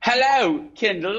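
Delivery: put-on British accent. Greeting the other speaker playfully in a good mood: fake British accent. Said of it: "We speak in a fake British accent".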